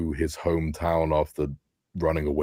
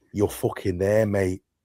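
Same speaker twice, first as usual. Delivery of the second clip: put-on menacing voice, higher pitch; 4 semitones higher than usual. Quoting a film's death threat scene: imitating Paddy Considine threatening. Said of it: "how he threatens him".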